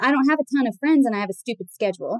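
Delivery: normal talking voice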